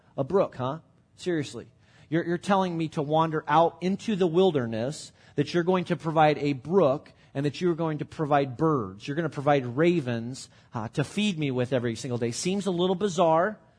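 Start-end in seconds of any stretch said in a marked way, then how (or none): none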